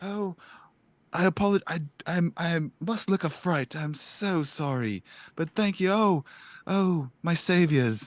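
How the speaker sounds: high, slow, apologetic yet thrilled and overjoyed gushing. Voicing a character who steps back from the arrivals: apologetic and overjoyed. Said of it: "doesn't wanna feel like he's crowding you".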